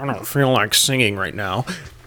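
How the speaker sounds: mocking, teasing put-on voice. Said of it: "And here's Daniel".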